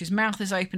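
ordinary talk, nothing marked

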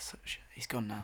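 low, toneless whisper.

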